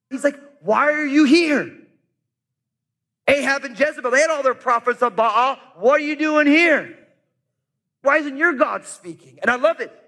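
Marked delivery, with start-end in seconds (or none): 0.6-9.4 challenging, confrontational voice. Retelling a prophet's words to a king: imitating a confrontational prophet. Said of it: "Pretty confrontational".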